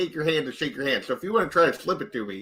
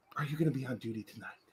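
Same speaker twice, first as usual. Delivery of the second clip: very soft, hushed, secretive, conspiratorial half-whisper; 3 semitones lower, 15 dB quieter than usual. Leaning in close to a guard, in character: half-whispering conspiratorially. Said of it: "I would lean in and whisper conspiratorially to her".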